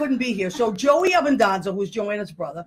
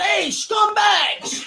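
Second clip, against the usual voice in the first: put-on very shrill, very high, full-blast yell; 10 semitones higher than usual. Retelling how a man drove up looking for two workers: retelling a yell. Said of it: "he yells up".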